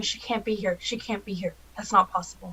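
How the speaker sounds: barely audible, very quiet muttered whisper. Player's character searching a room, muttering to herself, whispering under breath. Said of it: "underneath my breath, I'm just whispering".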